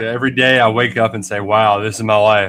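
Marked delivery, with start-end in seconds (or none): 1.4-2.5 slightly sarcastic mock dread, lower pitch. Retelling own morning thought about the dull preseason: slightly sarcastic, put-on dread. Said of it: "I'm being slightly sarcastic".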